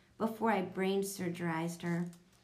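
ordinary delivery

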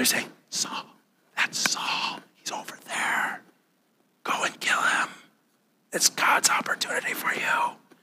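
very quiet, hushed, breathy whisper. Acting out David's men urging him to kill Saul: imitating a whisper. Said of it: "they begin whispering these things to him".

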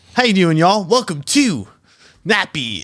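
energetic, lively, swooping delivery. Retrying the show's welcome after being told it had no energy: energetic podcast welcome. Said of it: "should I try one more time?".

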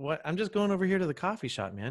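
casual, easygoing manner. Retelling being yelled at by a man in a parking lot, retelling playing it cool. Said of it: "I was just playing it cool".

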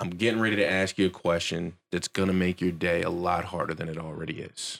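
serious grave tone with falling inflection at the end. Retelling the first words said to a hotel clerk at check-in: retelling own serious ask, falling ending. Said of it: "I do it in that tone of voice".

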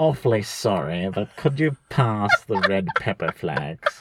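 put-on posh English accent.

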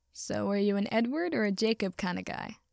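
plain reading voice

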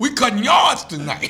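high, loud dad holler.

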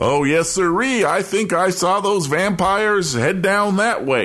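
goofy, dim-witted, high, dopey character voice. Retelling how someone misdirected another about vampires, imitating a dopey voice. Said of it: "talking in a dopey voice".

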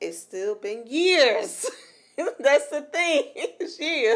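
very loud, rising voice, as in an argument. In an argument with the other speaker over how long it has taken, raised voice. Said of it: "You don't have to raise your voice".

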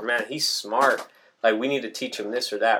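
plain

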